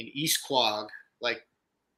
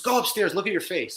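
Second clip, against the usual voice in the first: mock, high-pitched screaming voice; 7 semitones higher than usual. Retelling how the mother reacted on seeing the face: imitating mother screaming. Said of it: "screaming at me".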